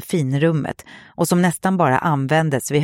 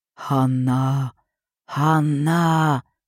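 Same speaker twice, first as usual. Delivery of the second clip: slow, eerie, ghostly drawn-out whisper. Narrator voicing a whisper heard on a cassette tape, slow ghostly whisper. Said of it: "sa den långsamt och spöklikt".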